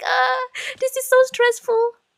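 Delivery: very high, overwhelmed, stressed-out exclamation. Retelling own reaction to being driven and ridiculed: imitating own stressed past self. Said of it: "So I'm like".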